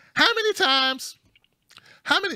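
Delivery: very high, put-on woman's voice. Rereading the commenter's question, switching to a put-on lady's voice. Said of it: "I need to go into a lady's voice".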